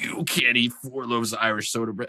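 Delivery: put-on furious, heated screaming, pitched high. Telling a story, the speaker acts out two guys who got mad: retelling angry screaming. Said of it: "they start screaming".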